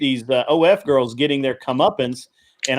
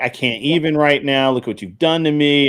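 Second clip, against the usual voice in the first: put-on tearful words through crying, weepy. Retelling what an upset streamer said while crying: imitating Kel crying. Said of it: "Kel's, like, crying".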